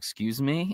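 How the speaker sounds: normal talking voice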